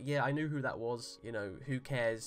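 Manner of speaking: normal talking voice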